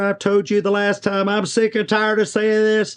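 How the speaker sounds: squeaky, very high-pitched complaining voice. Demonstrating how people start talking way up high in the stratosphere. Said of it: "you start talking way up here in the stratosphere".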